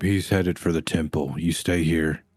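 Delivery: hushed whisper. In a role-play, a character warns the group, whispering to the group. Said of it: "I'm going to whisper to the group".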